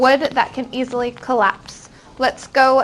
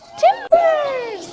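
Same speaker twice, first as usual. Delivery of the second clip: tiny, squeaky, very high-pitched mouse voice. Leading a class in repeating a vocabulary word: little mouse voice. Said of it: "Say that in a little mouse voice".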